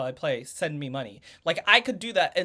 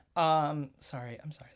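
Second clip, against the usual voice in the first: plain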